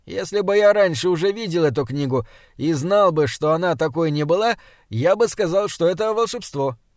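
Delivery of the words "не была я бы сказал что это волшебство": ordinary delivery, nothing marked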